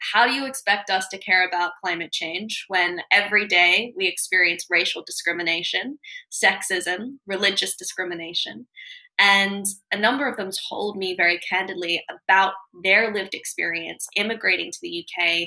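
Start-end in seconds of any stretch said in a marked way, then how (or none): none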